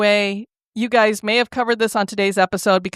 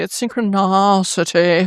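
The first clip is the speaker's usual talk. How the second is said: upper-crust, posh pronunciation. Showing how the upper crust say a word: upper-crust pronunciation. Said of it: "the way that the upper crust say synchronicity".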